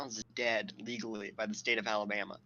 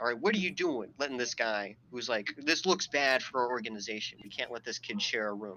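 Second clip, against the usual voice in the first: usual speaking voice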